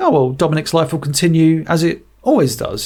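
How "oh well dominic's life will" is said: ordinary delivery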